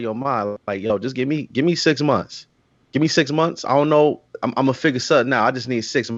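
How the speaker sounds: ordinary talk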